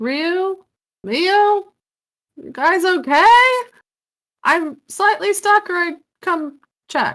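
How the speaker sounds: loud high call. Game master voices a character calling to those in the rooms next to her, raised voice. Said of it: "she's gonna raise her voice and be like".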